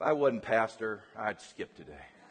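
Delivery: muttered under breath. A pastor recalling what he said getting out of bed, muttered under breath. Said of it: "I just said under my breath".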